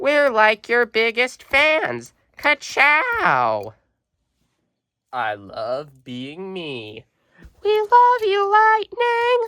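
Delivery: bad, very high, swooping, sing-song cartoon voice. Showing the twin cars Mia and Tia to viewers, bad Mia and Tia impression. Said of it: "Sorry for the bad voice impressions".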